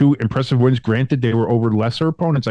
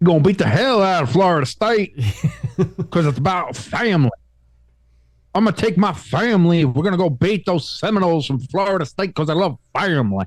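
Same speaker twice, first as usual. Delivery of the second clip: phony, higher-pitched put-on Southern accent; 6 semitones higher than usual. Mocking a man's boast about beating Florida State, in a fake Southern accent. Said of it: "in that fake Southern accent".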